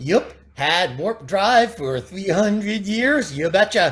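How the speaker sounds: put-on Fargo accent. Speaker acts out how someone talked: Fargo accent. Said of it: "they all talk like they're from Fargo".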